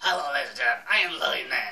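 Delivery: booming character voice at full, very loud volume. Asked to show it while chatting about Halloween, Louie Man impression. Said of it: "Wanna hear my Louie Man impression?".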